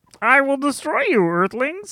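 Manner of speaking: classic cartoon Martian alien voice. Doing an impression asked for by the others: Marvin the Martian voice. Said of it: "it's what Marvin the Martian sounds like".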